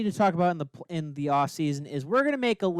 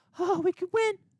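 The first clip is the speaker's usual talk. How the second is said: high, squeaky mock hopeful voice. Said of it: "and you're just gonna".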